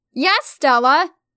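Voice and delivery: loud, calling-out shout. Emma, in the shower, answers stella who found her, shouted. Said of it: "I shouted".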